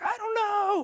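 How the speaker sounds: very high, loud, tearful squeak. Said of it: "And then she's like".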